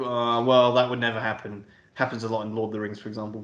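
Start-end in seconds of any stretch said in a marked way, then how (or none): 0.0-1.6 sarcastic, doubting, know-it-all tone. Imitating filmgoers who doubt film plots: imitating a sarcastic filmgoer. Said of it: "devil's advocate, sarcastic, like".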